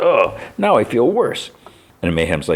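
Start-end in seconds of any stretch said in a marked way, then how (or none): 0.0-1.5 slow, very high, drawn-out groan of pain. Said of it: "groans in pain".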